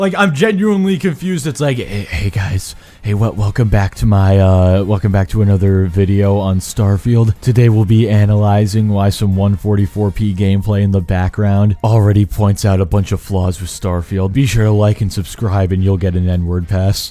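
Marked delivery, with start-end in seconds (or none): 1.8-17.1 mock whispering, lower pitch. Mocking a video maker who whispers: imitating someone whispering. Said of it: "why are you whispering?".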